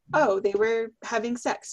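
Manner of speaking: usual speaking voice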